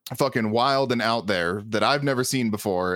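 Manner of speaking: ordinary talk, nothing marked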